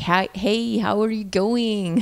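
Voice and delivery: put-on East LA accent. Asked to do the other person's accent, demonstrating an East LA accent. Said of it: "That's actually pretty good. That was very East LA".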